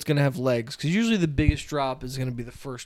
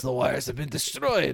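put-on heavy Russian accent, quieter; 5 dB quieter than usual. Quoting the same movie line again: big Russian accent. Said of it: "Big Russian accent".

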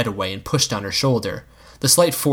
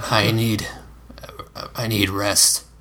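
softly spoken, close in, quiet and hushed; 2 semitones lower, 4 dB quieter than usual. Narrator reads a man's reply to a woman leaning close, spoken quietly. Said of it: "he said quietly".

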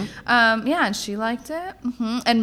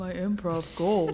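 put-on serious voice, lower and quieter; 4 semitones lower, 6 dB quieter than usual. Asked her improv goal for the year, the speaker answers mocking Tony's serious voice. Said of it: "why are you talking like that?".

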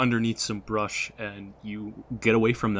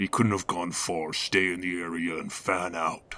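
low, deep orc voice; 4 semitones lower than usual. Narrating a tabletop scene, the speaker voices one of the passing orcs: orc voice. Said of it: "You 100% recognize them as orcs. / The mask appears to be a goat head with strange horns. ... and they appear to be large gray-skinned figures".

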